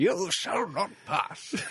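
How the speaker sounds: slow, drawn-out declaiming, every word stretched out. Joking about a film villain's voice with a Gandalf impression. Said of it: "do a Gandalf impression throughout the film".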